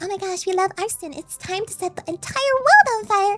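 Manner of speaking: very high-pitched put-on voice. Demonstrating different voices to play around with, first a really high-pitched voice. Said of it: "we can do like a really high-pitched voice".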